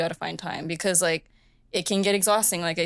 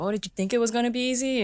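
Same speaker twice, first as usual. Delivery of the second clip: put-on local Hawaiian accent, pitched up; 5 semitones higher than usual. Quoting what the dad always says after school, imitating his hawaiian local accent. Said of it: "like in his local accent".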